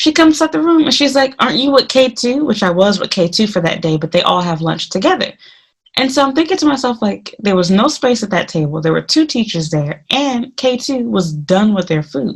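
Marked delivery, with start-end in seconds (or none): 1.4-2.4 put-on, pitched-up, irritated, annoyed accusing tone. Retelling a supervisor who came back annoyed: imitating an angry question. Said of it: "She gets pissed".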